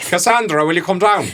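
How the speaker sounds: put-on Irish accent, calling out. Recalling being called by her full name, the speaker uses an irish accent. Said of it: "That just doesn't sound right in an Irish accent".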